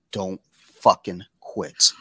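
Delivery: put-on, dead-serious, grave tone. Retelling what a teammate said on the sideline: imitating a dead serious warning. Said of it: "dead serious".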